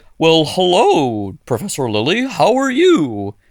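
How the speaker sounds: slow, swooping talking dolphin voice. Joking about footage of a dolphin on LSD: voicing a dolphin. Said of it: "it's just a dolphin being like".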